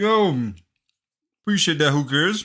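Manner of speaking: speaking with mouth full of food. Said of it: "I'm just stuffing something in my mouth".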